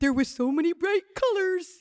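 put-on high, loud baby talk. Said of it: "speak as a baby or as a dog".

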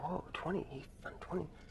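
put-on whisper. Telling a story about a contest count, acting out the whispers heard; retelling whispers. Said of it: "you hear, like, whispers".

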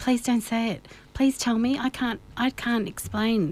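usual speaking voice

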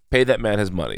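ordinary talk

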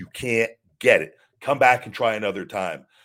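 mock-angry rant. Retelling what a man said when he came over mad about a lift: imitating someone angry. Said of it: "He was legit mad".

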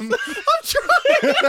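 very high voice cracking up, laughing through words. Answering the others who urge a joke out, laughing while talking. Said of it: "I've never seen him crack up so hard".

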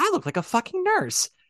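very high, dead earnest delivery. Show how the role was played in the original company's opening night audio, imitating Pamela Blair's earnest delivery. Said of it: "all the things she says it with such earnesty".

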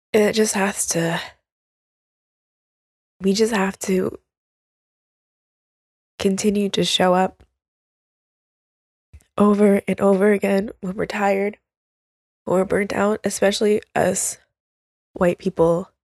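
tearful voice, crying while talking. Urging listeners to keep showing up even when tired, crying while talking. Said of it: "Sorry, I'm crying again".

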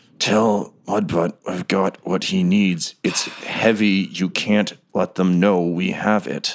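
slow, pained words forced through clenched teeth. A storyteller voices a character mid-scene, speaking through clenched teeth. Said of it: "He says through clenched teeth as all of this is happening".

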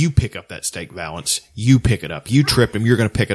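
put-on threatening tone. Retelling a film stare-down scene: quoting a stare-down threat. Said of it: "he stares him in the eye and he's like".

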